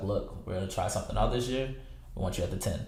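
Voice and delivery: ordinary talk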